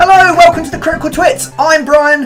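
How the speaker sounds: very high, excited voice. Opening the Critical Twits and introducing himself, in a high-pitched, excited voice. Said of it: "that thing with my voice where it goes really high pitched and kind of excited".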